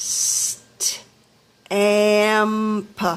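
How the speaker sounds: very slow stamp, st and amp separated. Sounding out a word for listeners, in slow motion. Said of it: "I'll say it in slow motion".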